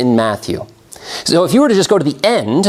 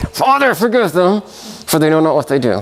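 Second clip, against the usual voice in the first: grudging, forced out through gritted teeth, jaw clenched; 2 semitones higher than usual. Acting out a quoted prayer line, as if through gritted teeth. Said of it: "through gritted teeth".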